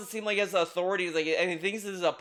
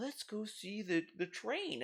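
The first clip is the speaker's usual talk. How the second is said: put-on very soft, drawn-out children's TV host voice; 2 semitones higher, 13 dB quieter than usual. Comparing it to children's shows: mocking children's show host voice. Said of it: "children's shows".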